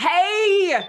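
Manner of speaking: Hey yelled very high, shrill and drawn out. Kicking in a door as a character, yelling on the way in. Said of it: "What are you yelling when you kick in there?".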